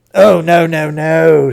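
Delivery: shocked voice. An uncle replying to a question, in a shocked voice. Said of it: "said Uncle Andrew in a shocked voice".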